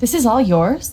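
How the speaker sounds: surprised, disbelieving tone with rising end.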